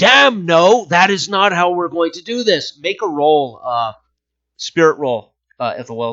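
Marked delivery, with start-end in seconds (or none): 0.0-2.8 mock roaring bellow at full volume. Game master voicing a character answering the sergeant, bellowing. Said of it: "he kind of bellows out".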